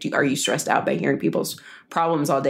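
ordinary delivery

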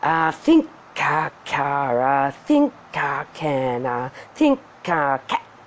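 slow, ponderous, lumbering. Narrator reads the starting-up sounds: slow and ponderous. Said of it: "slow and ponderous".

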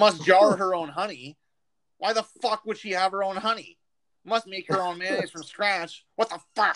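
indignant, incredulous, angry high-pitched ranting. Retelling a guy in an Xbox Live party reading the wife list, mock-angry reading. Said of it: "angrily reading the wife list".

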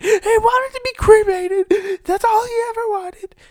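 shrill, very high, loud, drawn-out wailing scream. Storyteller quoting a woman who started screaming, imitating someone screaming. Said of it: "she started screaming. She's like".

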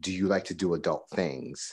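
put-on whisper. Retelling what a man said coming up from behind: imitating a whisper. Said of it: "he just whispered".

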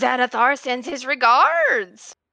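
very loud swooping battle yell, pitch swinging. Game master voices a hurt enemy yelling as it is hit, yelling. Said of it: "he yells out".

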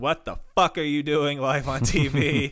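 mock freaked-out scream. Retelling a wrestling match where a commentator is grabbed: retelling a freaked-out scream. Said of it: "He freaks out and screams".

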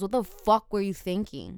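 normal talking voice

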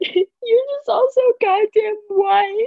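put-on wailing sobbing outburst, very high, very loud. Retelling a past emotional outburst, imitating past self sobbing. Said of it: "I'm like sobbing to Paris".

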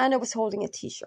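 ordinary delivery

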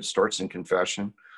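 ordinary talk, nothing marked

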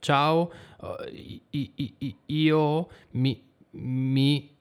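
hesitant, frightened stammer, words breaking off. Italian lesson explaining balbettare, showing stammering from fright. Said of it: "è possibile che voi iniziate a parlare così, tipo ciao, io mi... Questo è balbettare".

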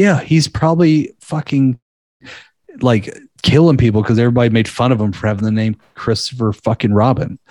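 ordinary talk, nothing marked

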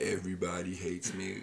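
woe-is-me, sad-sack, gloomy voice. Teasing the other speaker about saying they're okay: Eeyore voice. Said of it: "Like Eeyore".

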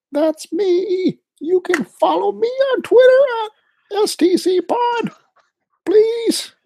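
very high, worked-up, angry voice. A podcast co-host, introduced as always angry, introducing himself in a high-pitched voice. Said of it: "Your voice got a little high pitchy there".

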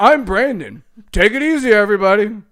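very loud, slow delivery. Ending the episode by imitating the other speaker: impression of Brandon. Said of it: "Now we're doing impressions?".

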